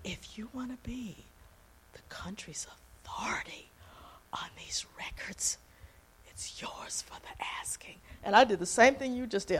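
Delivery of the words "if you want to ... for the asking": spooky, low, hushed, breathy near-whisper. Retelling what a man said to him, low voice. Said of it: "And then his voice got low".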